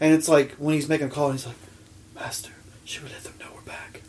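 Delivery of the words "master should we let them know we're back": hushed, whispering villain voice. Describing a villain who speaks only once, perform his call to his master whispering. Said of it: "ooh, a whispering villain".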